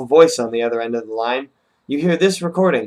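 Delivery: ordinary delivery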